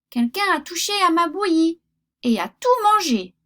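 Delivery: tiny, high, little storybook bear voice. Reading the littlest bear finding his porridge gone, in a tiny little voice. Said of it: "dit-il de sa toute petite voix".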